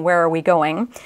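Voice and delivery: ordinary talk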